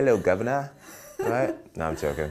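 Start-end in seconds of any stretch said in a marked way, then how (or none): 0.0-0.7 terrible put-on British accent. Greeting UK fans as a joke: bad fake British accent.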